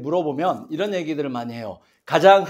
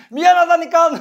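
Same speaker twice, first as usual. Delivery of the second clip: very high, loud, accusing, blaming yell; 12 semitones higher, 8 dB louder than usual. Demonstrating an apology to an eldest daughter said the wrong way: shouted, blaming apology. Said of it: "좀 큰 소리를 칠 테니까 놀라지 마십시오 ... 이 말하는 투가 비난조였거든요".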